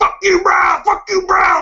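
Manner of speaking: very high-pitched, jeering screaming. Retelling a fan at the escalator: imitating a fan screaming. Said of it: "he was just screaming".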